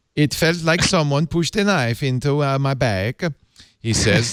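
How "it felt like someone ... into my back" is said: fake, failed, badly done put-on Swedish accent. Reading a news story, the speaker quotes an injured man: bad swedish accent. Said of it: "I should do this in a Swedish accent".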